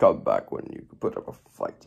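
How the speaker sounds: pitch dropped way down, raspy. Showing a Meta Knight plush in a plush collection, doing a Meta Knight impression. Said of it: "I was going to do an impression of Meta Knight".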